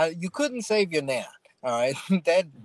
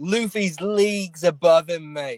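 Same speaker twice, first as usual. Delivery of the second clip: put-on Australian accent played as a character; 3 dB louder than usual. Mocking a reviewer doing a character in his Grand Line review, mock Australian accent. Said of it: "He's Australian?".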